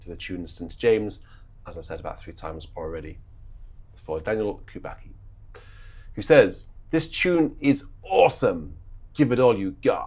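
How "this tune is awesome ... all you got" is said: put-on American accent with raised voice. Quoting what someone says about the tune: american accent. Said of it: "That was my best American accent".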